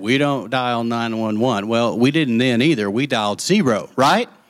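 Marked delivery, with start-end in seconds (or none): none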